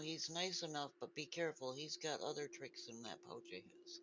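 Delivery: hushed, soft half-whisper. Climbing onto a companion's shoulders in a roleplay, half-whispering. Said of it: "I'm gonna whisper".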